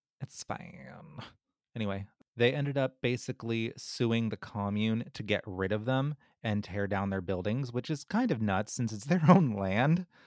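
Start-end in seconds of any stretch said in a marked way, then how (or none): 0.2-1.2 put-on hushed, breathy, whispered valley girl voice. After admitting loving the voice, saying the phrase once more, weird Valley Girl voice. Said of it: "that weird Valley Girl voice".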